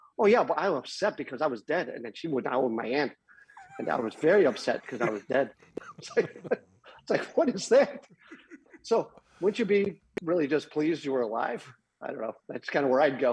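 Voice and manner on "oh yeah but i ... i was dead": ordinary talk, nothing marked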